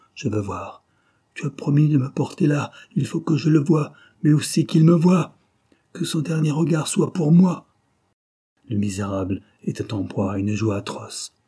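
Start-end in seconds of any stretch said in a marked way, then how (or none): 0.2-7.7 panting, breathless, pitched up, gasping each phrase. Reading a novel, the narrator voices a wretched man adding his words, panting.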